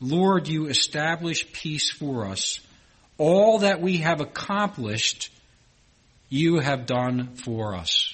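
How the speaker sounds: slow, deliberate reading.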